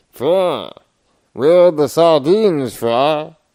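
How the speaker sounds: very loud, slow, bellowing cartoon voice. Showing the others a pretty mean Zoidberg: Zoidberg voice. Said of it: "I can do a pretty mean Zoidberg".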